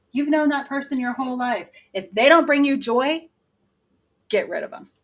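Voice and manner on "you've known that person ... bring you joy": loud, high shouting. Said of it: "that's why I'm yelling".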